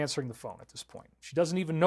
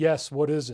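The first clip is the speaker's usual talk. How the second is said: lifeless, flat, monotonous, wooden voice, no inflection. Retelling answering a covert phone call, in a flat, monotonous, wooden voice. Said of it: "Her voice goes into a flat, monotonous, wooden voice".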